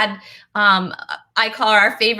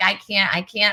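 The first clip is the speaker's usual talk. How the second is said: acted helpless laughter, slower. Recounting begging someone to stop making them laugh, retelling laughing helplessly. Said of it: "he was making me laugh so hard".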